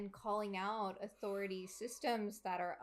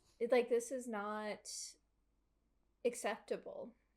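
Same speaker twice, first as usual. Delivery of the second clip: voice choking up, near tears; 3 semitones higher than usual. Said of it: "I don't wanna start crying".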